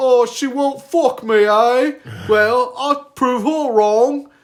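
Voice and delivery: very high, loud put-on British accent. Speaker mocks some British dude who supposedly made up a stat, fake British accent. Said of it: "what sort of fucking British guy I was doing".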